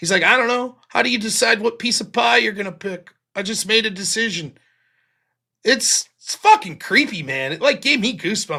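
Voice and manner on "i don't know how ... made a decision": put-on tearful crying voice, breaking down in tears. Retelling a movie scene where a caller breaks down: imitating someone crying.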